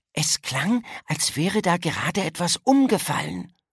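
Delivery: hushed, urgent half-whisper. Pointing at a classroom door, a girl tells her friend, half-whispering. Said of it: "flüsterte sie".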